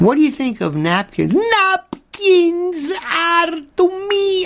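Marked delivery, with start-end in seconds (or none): 1.3-4.5 put-on Slavic accent, very slow and very high. Answering a question about napkins: Slavic accent. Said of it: "I'm doing a Slavic".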